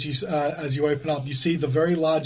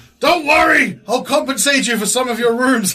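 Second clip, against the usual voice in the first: raised, high, desperate and placating voice; 8 semitones higher, 7 dB louder than usual. Voicing an innkeeper as guests flee the room: desperate innkeeper calming guests. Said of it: "desperately trying to, like, control the situation".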